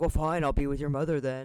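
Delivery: dropped deep voice. Retelling how she answers rude people, in a dropped deep voice. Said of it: "She'll just like drop her voice down and be like".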